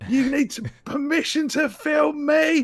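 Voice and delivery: put-on shouting woman voice. Retelling a woman shouting at a tourist: imitating a woman shouting. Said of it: "fucking just shouting in this guy's face".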